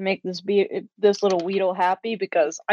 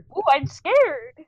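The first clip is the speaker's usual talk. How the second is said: fake frightened voice, higher; 8 semitones higher than usual. Answering how the character acts scared: acting scared. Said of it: "how you acting scared?".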